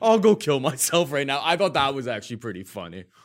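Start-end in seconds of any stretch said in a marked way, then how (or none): 0.0-1.4 sudden, raised, higher-pitched, heartbroken outburst. Retelling how Josh reacted while sitting right there: imitating Josh. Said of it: "he's just like".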